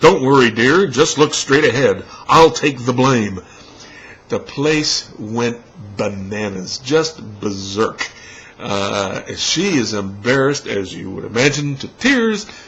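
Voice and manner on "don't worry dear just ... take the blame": loud, booming, declaiming voice. Telling a story, quoting a man who turns to a girl: retelling a very loud remark. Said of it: "says in a very loud voice".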